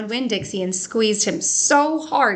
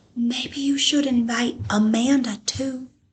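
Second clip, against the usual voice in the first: hushed whisper. Reading a story aloud, voicing a character pointing across the library: whispering. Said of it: "pointed at the back of the library and whispered".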